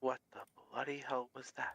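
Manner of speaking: acted, hushed, in-character stage half-whisper. Voicing a character who saw a creature vanish: half-whispering in character. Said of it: "he's just gonna whisper".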